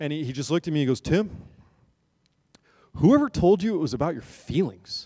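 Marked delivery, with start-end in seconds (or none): 1.0-5.1 classically deep, low, grounded voice. Retelling how a worship team member answered him; imitating Chad's deep voice. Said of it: "he had this like classically deep voice".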